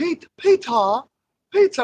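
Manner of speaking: high-pitched mocking voice. Retelling how someone made fun of Cesare Borgia: mocking Cesare Borgia impression. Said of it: "he's making fun of, uh, uh, Cesare Borgia".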